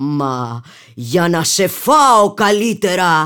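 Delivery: loud, bellowing, roaring wolf voice, rising in pitch. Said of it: "είπε ο λύκος βρυχόμενος".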